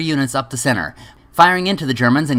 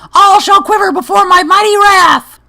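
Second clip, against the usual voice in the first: high, loud villain declaiming voice; 6 dB louder than usual. Announcing itself as Kittler to the other speaker: Kittler character voice. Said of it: "I am Kittler!".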